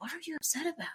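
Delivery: soft gentle concerned tone. Quoting a line from a listened scene, imitating Cassian speaking very gently. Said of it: "[name] says very gently as Cassian".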